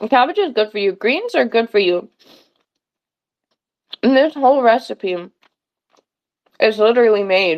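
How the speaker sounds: speaking while chewing, mouth full of food. Speaker eating while talking, talking with mouth full. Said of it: "talking with my mouth full".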